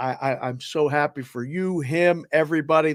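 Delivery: ordinary delivery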